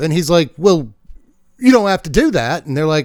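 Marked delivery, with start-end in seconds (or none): 0.6-2.6 fake British accent, pitched slightly higher. Telling a story, voicing Zurgo replying to the others, fake British accent as Zurgo. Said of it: "I keep doing the British thing today".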